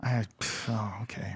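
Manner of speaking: deflated, let-down, low, quiet disappointment. Learning an attack missed in a game, disappointed. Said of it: "You sound so disappointed".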